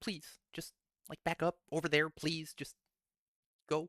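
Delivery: soft, high, gentle and polite, as nice as possible. Asking a cat in character to back away: as nice as possible. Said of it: "Trying to be as nice as he can to the cat".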